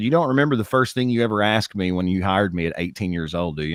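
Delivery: normal talking voice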